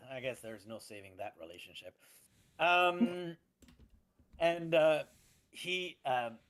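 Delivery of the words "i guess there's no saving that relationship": very hushed, low, quiet under-the-breath mutter. Narrating what a character says to himself, muttered under his breath. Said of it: "He he says under under his breath".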